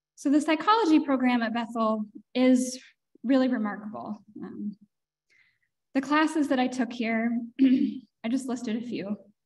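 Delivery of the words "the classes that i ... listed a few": choked-up voice, words catching with emotion. Speaker reflecting on gratitude for studying psychology: choked up. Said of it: "I don't know why I'm getting so emotional".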